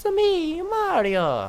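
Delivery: very high, loud, bouncy sing-song voice. Explaining a shared voice actor, then quoting: Mario impression. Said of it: "Mario and Paarthurnax share the same voice actor".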